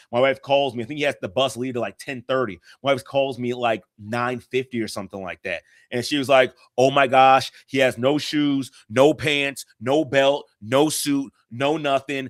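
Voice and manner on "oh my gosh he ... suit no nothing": mock frantic freaking out, very slow, dragged. A husband retells his wife phoning him in a panic, imitating her freaking out. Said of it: "and she's freaking out".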